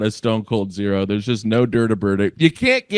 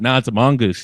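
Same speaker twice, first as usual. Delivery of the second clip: usual speaking voice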